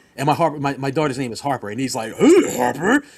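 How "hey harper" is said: loud, belted, high cartoon dog voice. Retelling a voice actor greeting the speaker's daughter, Scooby-Doo voice. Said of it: "How about I say it as Scooby?".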